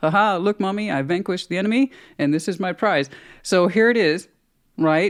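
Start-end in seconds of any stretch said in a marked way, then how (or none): 0.0-3.1 thrilled, proud, pleased pet dog voice. Retelling how the dog held up her prize: voicing Cinnamon the dog, proud. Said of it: "She's super proud of herself".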